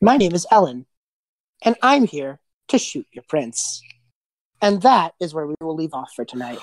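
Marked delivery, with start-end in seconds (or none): 0.0-3.8 put-on drow woman character voice. Game master voicing a drow woman appearing in a doorway, drow woman character voice. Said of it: "She goes".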